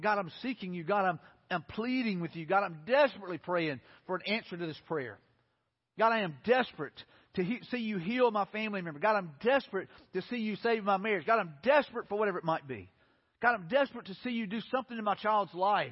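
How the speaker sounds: ordinary delivery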